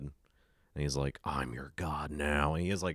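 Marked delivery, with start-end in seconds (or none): 1.2-2.5 really deep, distorted, very slow, drawn-out voice. Retelling a movie scene where Nicolas Cage squeezes a head, deep distorted Nicolas Cage voice. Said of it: "really deep and, like, distorted".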